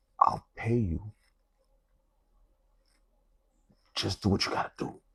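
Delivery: private, hushed whisper. Retelling a whispered offer to the tattoo artist: imitating a whisper. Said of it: "I whispered to the tattoo artist's ear".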